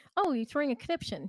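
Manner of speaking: put-on British accent. Retelling what a colleague said to a coworker: imitating a British accent. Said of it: "when you sound British".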